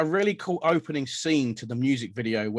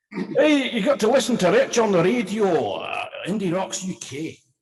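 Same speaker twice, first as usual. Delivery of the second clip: put-on Scottish accent, higher pitch, held throughout; 7 semitones higher, 4 dB louder than usual. Repeating the radio plug after being asked for it: scottish accent. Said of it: "Do it in Scottish as well".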